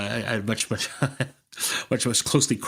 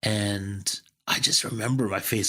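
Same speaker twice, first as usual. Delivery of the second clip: ordinary delivery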